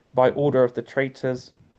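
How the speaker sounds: ordinary talk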